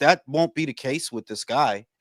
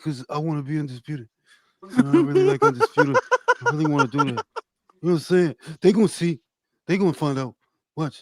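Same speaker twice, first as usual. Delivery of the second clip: mock jumpy, rushed nervous talk, swooping pitch. Doing an impression of Boots after others ask for it: imitating Boots talking quietly, nervously. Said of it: "That's the way he talk".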